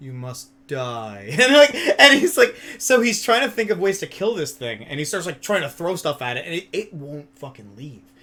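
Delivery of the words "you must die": dead-level, flat, toneless monotone. Telling a story about a man fighting a wasp, quoting him: imitating a monotone voice. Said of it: "in his monotone voice".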